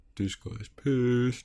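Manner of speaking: teasing, mocking, echoing tone. Repeating the other speaker's words to tease them: mocking imitation of the other speaker. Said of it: "I'm just mocking you".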